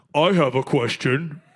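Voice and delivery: exaggerated, deep, slow, over-masculine macho voice. Mimicking how a man talks when asked for his questions, imitating an over-masculine voice. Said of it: "He talks like that, like like over masculine".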